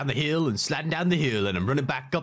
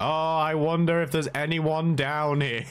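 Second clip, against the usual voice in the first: heavily sarcastic, dry, fake-curious wondering tone; 3 semitones higher than usual. Imitating an imagined player in proximity chat: imitating a sarcastic player. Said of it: "Just walking down really sarcastically".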